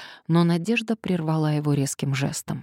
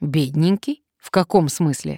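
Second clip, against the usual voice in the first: usual speaking voice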